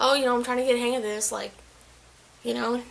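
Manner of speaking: ordinary talk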